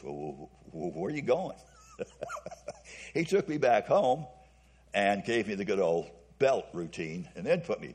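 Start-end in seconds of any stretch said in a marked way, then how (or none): 0.0-1.6 mock-faltering, hesitant put-on voice. Speaker recalls the driver turning around, retelling in a faltering voice. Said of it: "And I say in a faltering voice".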